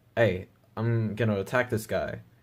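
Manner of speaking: ordinary delivery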